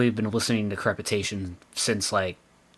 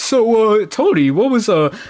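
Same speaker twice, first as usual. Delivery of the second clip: high, loud, eager mock interviewer voice.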